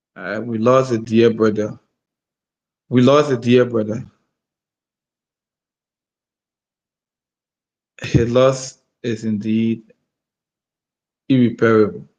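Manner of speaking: very low, tearful, teary voice. Speaker, saying they can't say anything further and are getting emotional, speaks on: teary. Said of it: "I'm getting teary".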